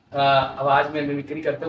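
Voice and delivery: ordinary talk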